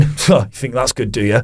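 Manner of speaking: mock muttering under breath. Retelling a front-row audience member's remarks: imitating someone muttering under his breath. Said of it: "under his breath".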